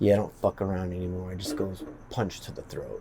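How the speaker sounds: low, quiet, scary, menacing voice. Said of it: "the way he said it was really kinda scary".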